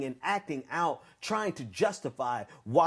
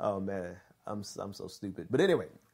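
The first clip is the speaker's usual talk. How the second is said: usual speaking voice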